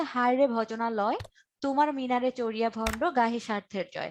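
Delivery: plain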